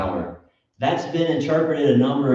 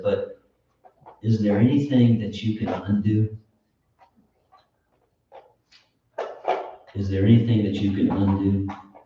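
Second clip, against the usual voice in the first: mock feeble, very weak, desperate pleading tone; 3 semitones lower than usual. Retelling a man's words near the end of his life: imitating a desperate, weak tone. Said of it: "in a very desperate, very weak tone".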